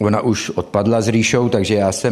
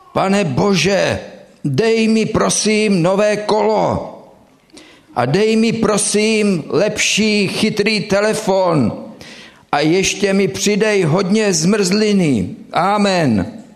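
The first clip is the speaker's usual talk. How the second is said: put-on, very high, full-throated shout at top volume; 11 semitones higher than usual. Telling a joke about a younger boy praying before bed, retelling his loud shouting. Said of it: "nejsilnějším hlasem, jakého byl schopný, volal".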